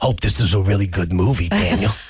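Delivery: dropped, very low, deep fatherly voice. Retelling what his dad said after coming to pick him up: impression of his dad. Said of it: "His voice is like this".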